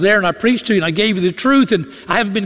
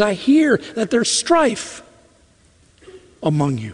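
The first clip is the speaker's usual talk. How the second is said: play-acted aching voice, heavy with pain. Quoting the apostle's letter to the church: Paul's pained voice. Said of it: "there's pain in his voice when he says".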